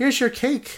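very high maid café hostess voice. Explaining maid cafes, acting out a worker there: maid cafe impersonation. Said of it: "Is that your best impersonation of a maid cafe?".

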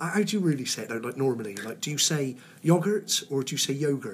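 ordinary delivery

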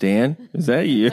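put-on woman's voice. Joking about being caught in a disguise, imitating Jenny. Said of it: "Jenny would be like".

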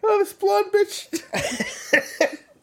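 laughing to tears, very high and very slow. Cracking up at own joke until crying: laughing to tears while talking. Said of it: "It's 'cause I'm crying".

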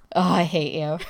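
playful fake sulking. Reacting to a new podcast intro from the co-host: mock pouting. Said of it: "Who sounds like she's pouting right now".

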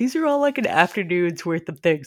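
words spoken through a yawn. Retelling a chat about a to-do list, speaking while yawning. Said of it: "Sorry, I'm yawning".

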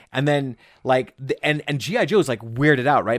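ordinary talk

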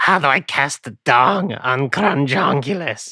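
frog in the throat. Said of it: "did you have a frog in your throat".

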